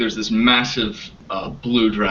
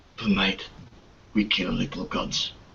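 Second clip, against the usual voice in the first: hushed character voice, quieter; 2 semitones lower, 8 dB quieter than usual. Voicing an armored figure leaning down to a dragon: whispering in character. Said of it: "he leans down to it and he whispers".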